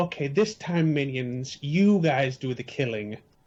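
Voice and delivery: slow, grandiose, lordly little goblin voice. Voicing a goblin commanding his minions: goblin with delusions of grandeur. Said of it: "A little goblin with delusions of grandeur".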